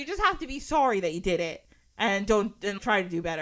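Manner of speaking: ordinary talk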